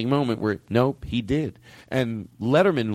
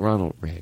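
mock soft delivery, lower; 4 semitones lower than usual. Retelling how an interviewee named the president who did it: imitating saying it softly. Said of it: "He said it so softly".

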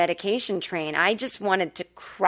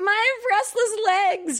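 mock, very high, babyish whine; 14 semitones higher than usual. Retelling waking up after surgery, imitating own past whining. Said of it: "whining like a baby".

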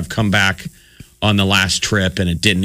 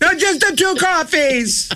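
play-acted slow, drawn-out, very high-pitched yelling. Telling friends how the order was repeated to the confused staff, acting out the shouting; imitating yelling. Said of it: "So I'm just yelling out my order".

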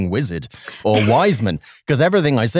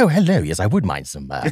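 prim, proper, mechanical robot butler voice. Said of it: "I go a little bit C three P O".

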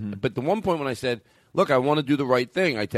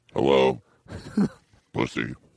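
very low, deep demonic robot voice; 12 semitones lower than usual. Showing what the same opinions would sound like: put-on demon RoboCop voice. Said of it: "That sounds like a demon RoboCop".

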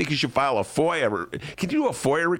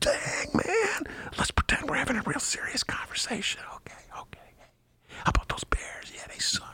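soft, unvoiced whisper. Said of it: "chose to whisper in her ear".

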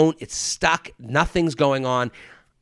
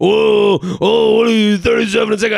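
rough, creaky put-on douchebag character voice; 7 semitones higher, 6 dB louder than usual. Retelling what a famous comedian said on meeting him: imitating Jim Gaffigan's douchebag voice. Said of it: "he did do that voice".

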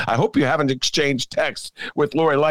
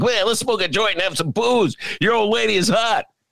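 high, sly, sneaky scheming voice; 6 semitones higher than usual. Retelling what Eddie Haskell said once the mom left: imitating Eddie Haskell scheming. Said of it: "he'd be like".

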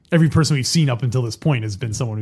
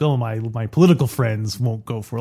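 plain

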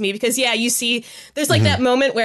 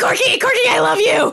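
mock screaming fan voice, higher and louder; 12 semitones higher, 4 dB louder than usual. Imitating an audience member at a show: imitating a screaming fan. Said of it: "screaming at the end of it".

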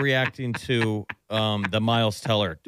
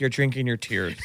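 plain

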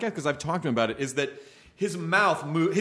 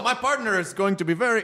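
fake French Canadian accent, pitched higher; 5 semitones higher than usual. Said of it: "I'm doing French Canadian accent".

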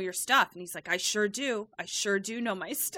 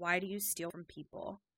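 much quieter, lower, under-the-breath mutter; 3 semitones lower, 9 dB quieter than usual. Recapping a scene where a cowering character confronts the others, muttering under his breath. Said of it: "very quietly under his breath is like".

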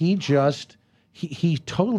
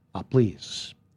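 low put-on voice, heavy emphasis, swings to a shout. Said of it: "to do Bill Shatner".

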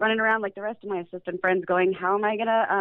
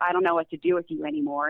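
put-on dismissive tone, lower; 4 semitones lower than usual. Retelling what a surgeon said after throwing up his hands: imitating a dismissive tone. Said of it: "in a very dismissive way".

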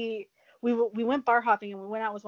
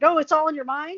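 loud, raised, pitched-up hollering yell; 6 semitones higher, 7 dB louder than usual. Retelling yelling into the bathroom at someone who threw up, retelling a yell. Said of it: "I start yelling into the bathroom".

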